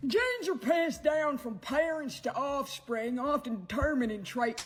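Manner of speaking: mocking, very high put-on rural American accent. Mocking an ad in a sort of American redneck accent. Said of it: "redneck accent".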